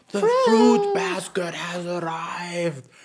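mock, light, high, slow, stretched-out announcing call. Telling a story, acting out someone yelling to everyone: retelling a yell. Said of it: "someone's like yelling".

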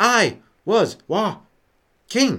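very slow, stretched-out words. Imitating how William Shatner says a sentence: William Shatner slow delivery. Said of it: "Just talk slowly".

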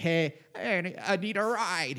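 slow, high, offhand. Retelling a story, quoting a passenger asking for a ride: Paul Giamatti voice. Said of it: "You know how Paul Giamatti sounds".

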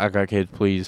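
mock sobbing with a pleading, tearful tone. Retelling how the speaker begged after messing up, imitating crying while pleading. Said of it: "because I cried, being like".

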